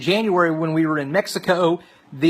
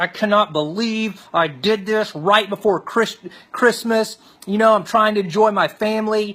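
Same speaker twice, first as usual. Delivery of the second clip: put-on furious, fed-up, angry yelling; 4 semitones higher than usual. Retelling an outburst after a painful procedure: imitating own angry yelling. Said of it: "I am yelling. I'm so angry".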